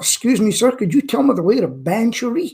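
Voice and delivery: put-on American accent. Retelling a story about an American who came up one day, imitating an American accent. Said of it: "An American come up".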